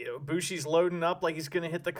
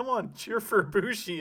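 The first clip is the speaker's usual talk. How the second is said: put-on taunting voice, higher pitch; 4 semitones higher than usual.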